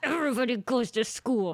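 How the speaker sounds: prim, stuck-up, snooty high-pitched voice. Imitating the snooty woman who decided snow days. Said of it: "she talks like this".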